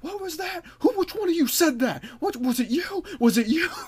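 very high, shrill, confronting yell. Retelling how a man confronted the group: imitating someone yelling. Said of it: "He starts yelling".

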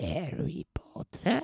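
very high, creaky, squeaky voice. Speaker teased for terrible accents tries again: sounding like Dobby. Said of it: "Now you sound like Dobby".

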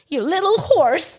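put-on furious voice. Retelling an actress's angry line in a fight scene: imitating Alexa's angry line. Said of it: "she's angry".

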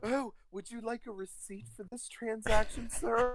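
mock sugary, overly polite, high way-too-nice clerk voice. Imagining a friend handling a transaction: imitating Sean being way too nice. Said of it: "Sean would be like way too nice".

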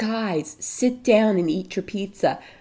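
ordinary talk, nothing marked

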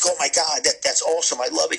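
put-on thrilled, gushing, excited delight. Tattoo artist acting out customers looking in the mirror, imitating excited tattoo customers. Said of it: "they would be excited".

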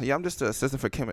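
put-on humble, unexcited tone. Imitating a friend's modest answer about his job: imitating a humble, unexcited reply. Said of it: "you all like".

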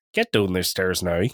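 put-on heavy Northern Irish accent. Contrasting how Southern and Northern Irish family members talk, in a Northern Irish accent. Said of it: "whereas the Northern Irish is".

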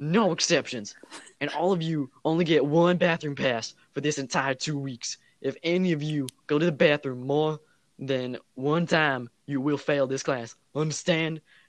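put-on very loud, booming, really thick Southern accent. Imitating the driver's ed teacher laying down class rules, really heavy Southern accent. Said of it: "really, really southern".

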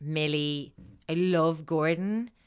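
ordinary delivery

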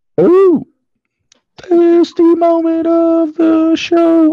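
very high, very loud, stretched-out squeal. Show host announcing the next segment, in a very high-pitched voice. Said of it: "Please never make your voice go that high again".

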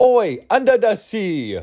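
very slow, high, put-on Japanese accent. Trying out another accent for listeners, Japanese accent. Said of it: "that was my Japanese one".

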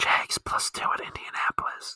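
hushed whisper close to the mic. Sharing a best bet so the viewers don't hear, whispered into the mic. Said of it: "Let me whisper it into the mic so the viewers don't hear it".

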